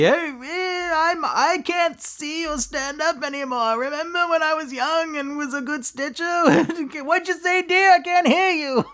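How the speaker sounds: put-on high, slow, aged sixty-year-old old-timer voice. The speaker performs their own impression of a sixty-year-old. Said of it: "that's my image of of sixty".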